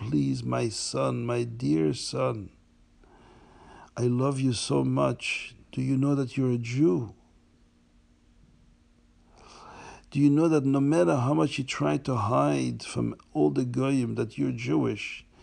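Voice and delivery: put-on loving, tender, begging voice. Retelling a dream where an old man begs his son: imitating a loving, pleading voice. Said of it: "with a very loving voice".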